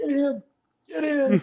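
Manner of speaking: very high, very slow, drawn-out dying last breath. Retelling a match, quoting a beaten tag partner: imitating a dying last breath. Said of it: "with his last breath".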